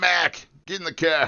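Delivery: put-on New England accent. Joking that New England people all talk like that: New England accent. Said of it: "all those guys talk like that".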